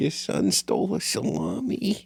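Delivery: high, creaky, raspy put-on voice. Quoting a Depression-era movie wife's lines: Renee Zellweger impression. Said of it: "Nailed it".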